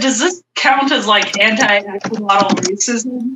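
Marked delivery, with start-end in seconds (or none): none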